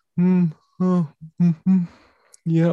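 high, little mock stifled-yawn murmurs. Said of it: "I see those micro yawns".

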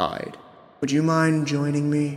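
mild, kindly, gentle voice. Narrator voices a voice calling Hyde, the last one awake: gentle voice. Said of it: "you hear a gentle voice".

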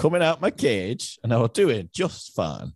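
put-on Chorley English accent. Imitating how another player read a quiz lyric: imitating a Chorley accent. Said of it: "how you say these in a, like, a bit of a Chorley accent".

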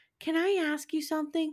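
eerie, strange, creepy tone, pitched a bit high. Retelling a scene at home, speaker voices Laura speaking to Almanzo in her weird, creepy voice. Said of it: "in her weird, creepy voice".

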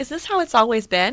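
normal talking voice

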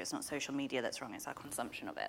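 grave, serious, very low and very soft. Speaker in a two-person chat suddenly turning serious, in a serious low voice. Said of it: "I suddenly got very serious and very low with my voice".

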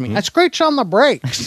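high, animated, swooping sing-song voice. Reading from a story about a man, trying a David Lynch impression. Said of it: "let's see if I got a David Lynch".

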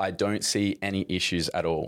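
ordinary talk

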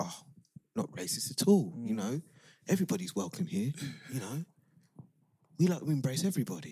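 put-on East London accent. Mocking how the UK prides itself on welcoming everyone, in an EastEnders voice. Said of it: "Is that your EastEnders voice?".

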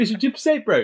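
put-on New Zealand accent. Bantering about a guest's years in Australia, says it in a Kiwi accent. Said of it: "just that Kiwi accent".

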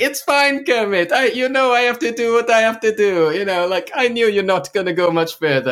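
overjoyed, beaming cheer, very loud and very high pitched. Retelling a movie scene where a friendly prison guard speaks: imitating a really happy guard. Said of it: "really happy".

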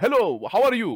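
accent from the Middle East. A comedian shows the accent used on stage: generic Middle Eastern accent. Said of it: "I go to generic Middle Eastern guy".

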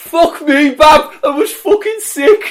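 very high, very loud, excited ecstatic scream. Retelling a wrestler shouting backstage during a loud show: imitating Trent Seven shouting excitedly. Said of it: "I could still hear him in the back going".

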